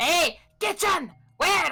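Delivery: very loud, high, all-out top-of-the-lungs shout. Voicing a character who turns around and calls out: shouting at the top of his lungs. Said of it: "shouts at the top of his lungs".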